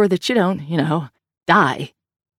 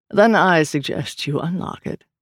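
dry, slower. Meeting people who keep his book locked away, a man remarks dryly. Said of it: "Mr. Norse remarked dryly".

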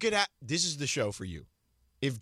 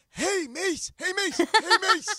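put-on old-man voice, higher and louder; 14 semitones higher, 5 dB louder than usual. Picturing a friend calling out in old age: imitating John as an old man. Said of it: "it'd be John going".

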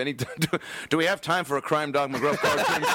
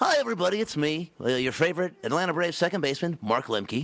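countdown-show disc jockey delivery. Introducing himself to everybody as Mark Lemke, but in a Casey Kasem voice. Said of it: "That's Casey Kasem".

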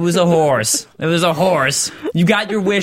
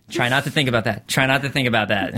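usual speaking voice

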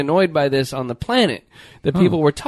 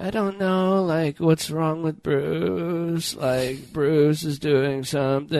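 slow, utterly bored drawl, Bruce stretched out; 5 dB quieter than usual. Retelling a reality show moment: imitating a bored Kardashian voice. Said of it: "this voice that they do, which makes them sound like they're, like, really bored".

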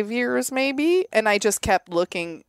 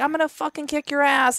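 mock angry yelling, furious and screamed; 6 semitones higher than usual. Retelling a friend's threat shouted at a neighbor, retelling a scream. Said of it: "they're screaming".

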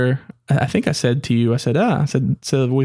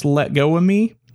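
small, mechanical, robot-like voice; 3 semitones higher than usual. Retelling a voice heard during some noises, asking another person if they noticed; little robotic voice. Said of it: "in a little robotic type voice".

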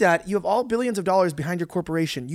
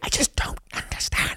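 sudden, slow, breathy whisper close to the mic. Imitating a president freaking out at the mic: imitating Biden whispering. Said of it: "he starts going to the mic and goes".

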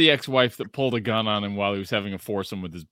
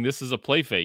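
ordinary talk

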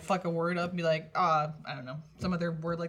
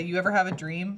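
ordinary talk, nothing marked

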